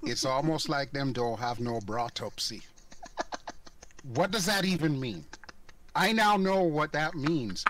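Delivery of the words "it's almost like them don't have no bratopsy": put-on thick, broad Jamaican accent. Recalling a saying, the speaker quotes their mom in a really thick jamaican accent. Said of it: "a really thick Jamaican accent".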